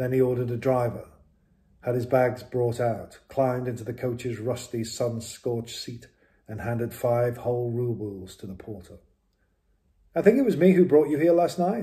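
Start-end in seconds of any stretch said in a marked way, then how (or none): 10.2-11.8 cheerful, friendly, raised, pitched-up voice. A coach driver speaks to his passenger while picking up the reins, cheerfully. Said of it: "the driver said cheerfully".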